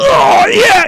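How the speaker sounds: very loud high moan.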